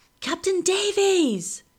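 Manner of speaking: shrill, very high-pitched, loud shout. Someone on the river calls out, waking the prisoner in his cell, with a shout. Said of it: "The shout wakes me".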